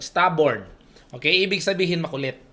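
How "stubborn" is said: Filipino accent on "stubborn", not American. Showing how the English word stubborn is said: Tagalog accent. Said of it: "Hindi po ako American accent. O ganito lang, Tagalog na Tagalog".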